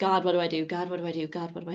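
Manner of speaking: re-enacted crying. Recalling lying awake in bed months into her marriage, she reenacts crying. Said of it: "I would lay awake in bed crying".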